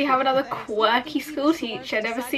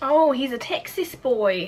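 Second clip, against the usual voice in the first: slow, put-on New Zealand accent. Reacting to a show, the speaker comments in a put-on kiwi accent. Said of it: "I don't know why I'm doing like a Kiwi accent".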